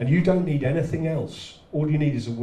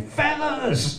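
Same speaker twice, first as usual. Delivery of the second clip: very high, piercing, shrill scream. Telling how a woman screamed one word at a man, retelling a scream. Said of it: "she just screamed at this guy".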